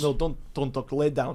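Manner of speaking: fake, put-on Russian accent. In a comedy role-play, playing the Russian masseur giving a massage, put-on Russian accent. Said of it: "Give us a Russian massaging Deshaun Watson".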